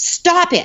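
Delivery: firm, assertive, commanding tone at very high pitch. Showing parents how a child should tell off a bully, firm and assertive. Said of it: "it sounds assertive and firm".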